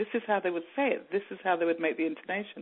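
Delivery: ordinary delivery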